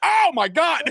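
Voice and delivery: very high, half-swallowed, held-back scream. Retelling watching a game catch beside a daughter: retelling a held-back scream. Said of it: "I didn't wanna scream in her ear".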